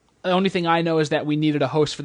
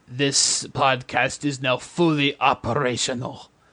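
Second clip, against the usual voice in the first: drawn-out space tyrant voice; 3 semitones lower than usual. Podcast host opening the episode in his best impression: Emperor Palpatine voice. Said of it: "my best Emperor Palpatine voice".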